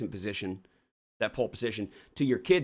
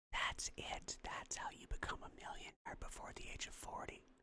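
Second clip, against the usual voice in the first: breathy, very quiet ASMR whisper, close in the ear. Speaker doing a mock asmr bit for the listener: mock asmr whisper. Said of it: "A S M R".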